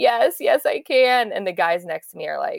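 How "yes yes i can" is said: put-on very slow, high, sobbing hysterical crying. Retelling her answer to a flight attendant's emergency question: retelling hysterical crying. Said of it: "And I'm like hysterically crying".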